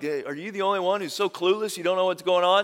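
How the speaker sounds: mock-salty, put-on salty tone. Retelling one man's salty comment to the guy they're talking to, mock-salty. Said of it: "this salty comment".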